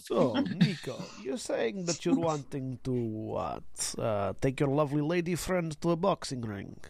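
put-on Russian accent laid on thick. Voicing a mafia contact asked about a fight: heavy Russian accent. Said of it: "very heavy Russian accents".

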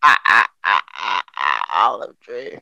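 voice dropped deep and dragged out. Joking about an olive tree: bad Popeye impression. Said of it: "that's a worst Popeye impression".

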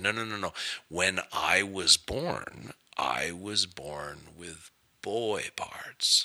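put-on deliberate, calculated delivery. Retelling a woman's reply during an argument with the speaker: very slow and calculated. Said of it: "she spoke very slow and very calculated".

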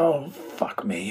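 very gruff voice. Retelling a phone call, the speaker quotes the man who answered, imitating a gruff voice. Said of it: "a very gruff voice says".

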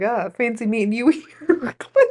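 speaking while laughing, cracking up. Retelling a kid's line to a sponsor on a trip, laughing while talking. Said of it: "I can't even get through it without laughing".

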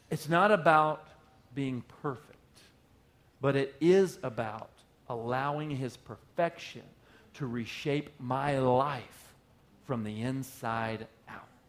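unhurried, slow, deliberate, weighted delivery. A speaker repeats their point once more, said slowly. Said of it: "I'm going to say that slow".

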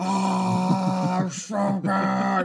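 loud moan with the ah stretched out. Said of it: "He's like".

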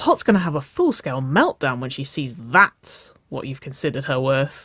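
plain reading voice

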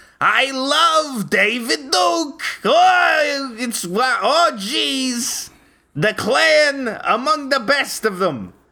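goofy, very high, slow voice, "oh" stretched.

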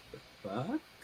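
muttered very softly under the breath. Narrating a tabletop game scene, retelling their own reaction, muttered under the breath. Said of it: "you just hear me under my breath go".

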